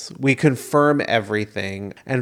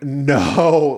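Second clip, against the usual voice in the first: desperate scream; 3 semitones higher than usual. Retelling a phone call, acting out their own reply: retelling own scream. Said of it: "like absolutely screaming".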